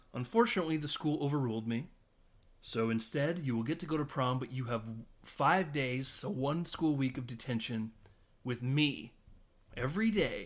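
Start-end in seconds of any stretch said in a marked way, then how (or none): none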